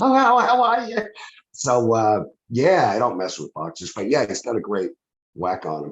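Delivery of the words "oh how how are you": loud high-pitched voice. Retelling meeting a champion boxer in a bar: imitating Tyson's high voice. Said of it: "there was that high voice".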